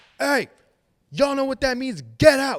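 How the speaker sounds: shrill, booming, very loud, high yell. Retelling a ghost hunter yelling at an empty room: imitating someone yelling. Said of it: "start yelling at the room".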